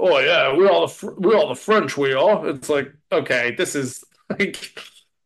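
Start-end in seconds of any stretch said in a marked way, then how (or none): 0.0-2.5 put-on British accent. Mocking a British cast playing French people, put-on British accent. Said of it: "everyone who's in it is like British".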